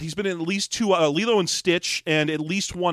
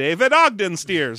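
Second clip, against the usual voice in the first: loud, cheesy, crappy cartoon doctor voice; 2 semitones higher, 5 dB louder than usual. Speaker shows how he says the caller's name, in a doctor from The Simpsons voice. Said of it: "Like I'm I'm that crappy doctor from The Simpsons".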